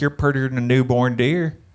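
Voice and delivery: own accent exaggerated, turned up thick. Speaker describing walking over to a woman, accent turned up. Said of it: "turn my accent up a little bit".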